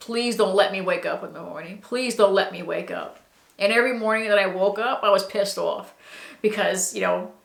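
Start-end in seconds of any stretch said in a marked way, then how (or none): 0.0-3.2 desperate, pleading, begging tone. Retelling what they begged every night: retelling own begging. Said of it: "every night I was begging".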